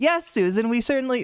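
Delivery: male TV news anchor voice. Acting out imagined broadcasters, the speaker voices Bob's reply, in Susan's broadcaster voice. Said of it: "Bob's voice for Susan".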